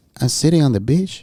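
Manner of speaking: put-on Salvadoran accent. Retelling a text a friend sent from the beach: imitating Jose's Salvadoran accent. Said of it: "Okay, I'm gonna do the accent".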